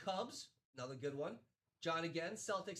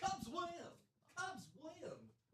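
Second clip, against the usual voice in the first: very high-pitched, repeated calling-out voice; 11 semitones higher, 3 dB quieter than usual. Calling a card win, imitating the announcer: Harry Caray impression. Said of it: "one of the best Harry carries I've ever heard".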